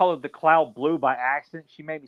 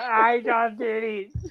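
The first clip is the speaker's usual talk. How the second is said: high, slow, drawn-out dopey mock voice. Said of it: "It's like".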